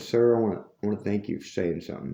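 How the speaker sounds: soft, quick voice. Quoting what an older cashier quietly said to the speaker: retelling a quiet remark. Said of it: "she quietly said to me".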